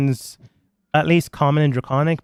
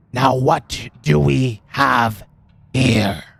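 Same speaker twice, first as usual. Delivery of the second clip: furious, slow, halting, broken speech. Voicing a character who turns to the players, in a very angry voice. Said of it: "in a very angry voice in common".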